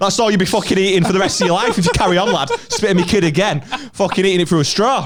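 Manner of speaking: high-pitched, loud, mock threatening tone.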